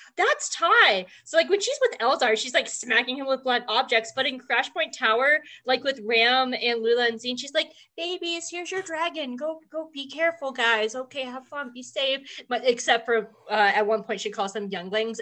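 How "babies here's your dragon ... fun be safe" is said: play-acted sweet, kindly voice. Imitating Ty York talking to the kids: Ty York being sweet. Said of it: "she's so sweet to the kids".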